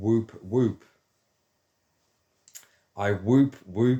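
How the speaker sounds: words broken up by laughter and whoops. Describing a trick for lifting one's mood, laughing while saying it. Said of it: "I can't say this without laughing".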